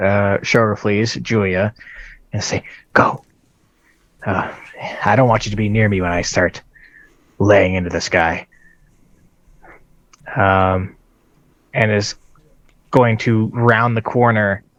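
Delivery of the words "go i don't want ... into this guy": quiet whisper in a character voice. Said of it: "whisper to".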